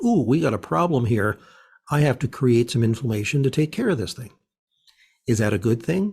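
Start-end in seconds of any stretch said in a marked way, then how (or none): none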